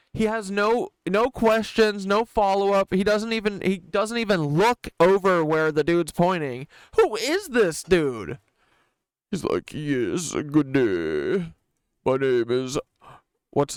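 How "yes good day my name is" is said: mock posh British voice, lower pitch. Mocking a journalist who asks no questions: mock posh British voice. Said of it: "a posh British name".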